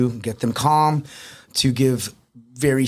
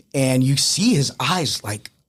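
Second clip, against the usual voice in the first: ordinary talk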